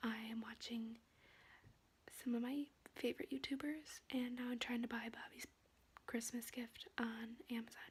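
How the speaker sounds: in a whisper. Staying awake at night while the whole family sleeps, whispering. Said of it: "I'm whispering because my whole family's sleeping".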